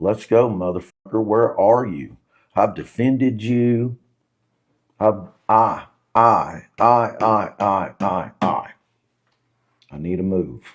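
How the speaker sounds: mock full-throated bellow, loud, all-out shouting. Speaker retells what they yelled at God after leaving, high, Bible on the dash: retelling a loud shout at God. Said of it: "in the loudest voice that I have ever used".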